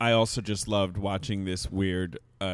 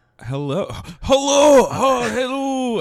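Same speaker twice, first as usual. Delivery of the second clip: bad put-on Irish accent, much higher, slower; 8 dB louder than usual. A guest on a talk show tries out an accent: bad irish accent. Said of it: "I'm trying to do an Irish accent".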